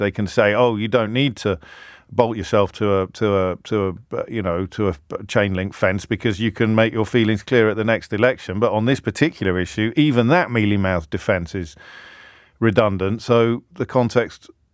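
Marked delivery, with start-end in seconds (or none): none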